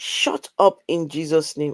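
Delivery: normal talking voice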